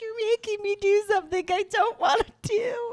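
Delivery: tearful, very high-pitched bawling wail. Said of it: "I was bawling".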